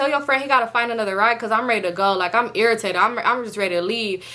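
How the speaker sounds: ordinary talk, nothing marked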